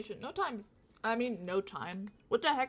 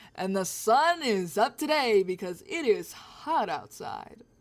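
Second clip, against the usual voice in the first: loud, deliberate TV weather-reporter delivery; 5 dB louder than usual. Repeating own line for a joke: weather reporter voice. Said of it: "I sound like a weather reporter".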